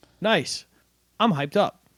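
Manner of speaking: mock flat delivery with zero excitement. Acting out a player's postgame quote: imitating Joey's flat "hyped". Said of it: "I'm going to act out how Joey said this".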